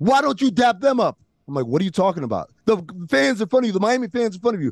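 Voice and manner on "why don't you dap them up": high, heated, riled-up voice. Retelling how an angry fan turned on the speaker after a Miami touchdown, retelling a fan's screaming. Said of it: "he starts screaming at me".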